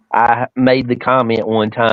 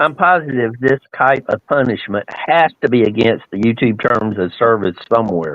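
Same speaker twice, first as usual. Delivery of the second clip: ordinary delivery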